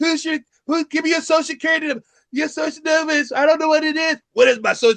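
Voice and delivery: squeaky, very high-pitched put-on voice. Retelling a comedian's joke about his wife, imitating his put-on wife voice. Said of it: "he's just doing the voice".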